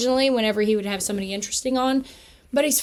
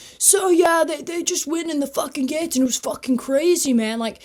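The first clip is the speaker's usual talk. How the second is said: deliberately dopey put-on voice, pitched higher; 6 semitones higher than usual. Imitating a history teacher from a bit: imitating a teacher playing dumb.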